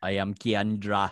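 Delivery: odd, slow, loud mock Caribbean accent.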